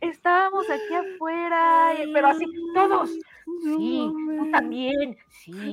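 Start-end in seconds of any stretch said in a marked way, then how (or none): 3.6-5.7 odd, weird, slow, strange scolding voice. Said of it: "así te hablaba".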